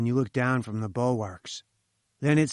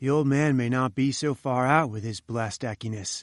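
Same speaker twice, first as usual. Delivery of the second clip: usual speaking voice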